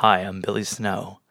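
radio announcer voice. After picking a name, a speaker tries it out in a radio announcer voice. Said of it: "It's my radio announcer voice".

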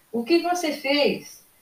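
high, accusing voice, drawn out slowly. A father calls up to his daughter leaning over the safety bar, shouting. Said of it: "gritou ele".

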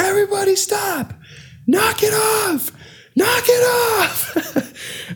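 very slow, very high, drawn-out acted screaming. Retelling stopping a wedding fight over the microphone: imitating own screaming. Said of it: "I was screaming in the microphone".

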